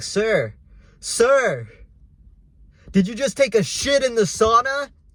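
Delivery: play-acted aggressive, high, drawn-out yelling. Retelling what two people in a sauna yelled at him, retelling a yell. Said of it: "They start yelling at me saying".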